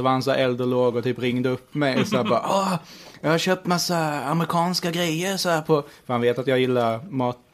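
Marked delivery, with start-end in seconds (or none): 2.5-5.8 slow, pitched-up, boastful dad voice. Retelling a phone call from dad bragging about purchases: imitating dad's voice. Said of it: "kör din farsas röst igen".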